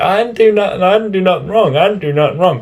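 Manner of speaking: put-on very high, rushed bratty kid scream. Retelling a bratty kid screaming back at the teacher, imitating a kid screaming. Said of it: "he's like screaming at the teacher".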